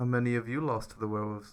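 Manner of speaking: hushed half-whisper under the breath. A game master voices the boss speaking to Parsley, half-whispering under his breath. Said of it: "he just whispers under his breath".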